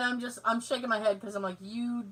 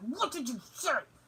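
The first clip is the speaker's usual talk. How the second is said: imitated yelling, words bitten out through gritted teeth; 3 semitones higher, 7 dB quieter than usual. Acting out what parents say when you walk away mumbling: imitating yelling through teeth. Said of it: "Yelling through your teeth".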